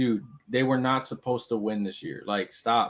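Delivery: ordinary delivery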